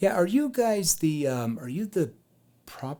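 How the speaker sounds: puzzled, uncertain, confused, unsure tone. Demonstrating a role-play, coming to the door in a confused tone. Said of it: "I actually want to have kind of a confused tone".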